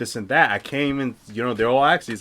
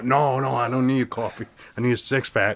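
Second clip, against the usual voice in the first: imitated shaking, trembling man's voice. Retelling the boss refusing coffee and asking for beer: imitating a shaking man. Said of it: "The guy was shaking".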